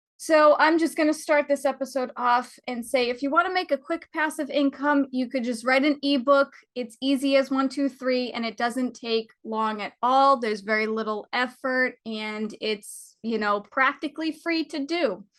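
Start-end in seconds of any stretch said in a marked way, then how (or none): none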